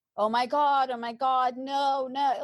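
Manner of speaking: high, drawn-out, distressed cry. Retelling hearing news of a death by phone: reenacting own past screaming. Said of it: "I started screaming".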